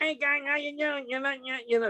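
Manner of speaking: squeaky, helium-sounding voice. Imitating how Maynard talks, like he inhaled helium: high helium-like voice imitating Maynard. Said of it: "sounds like he inhaled helium".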